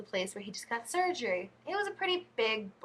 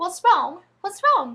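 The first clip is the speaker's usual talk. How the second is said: put-on high, loud, posh English accent; 8 semitones higher, 12 dB louder than usual. Retelling how she answered when he called her over, imitating herself in an English accent. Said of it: "in that England accent".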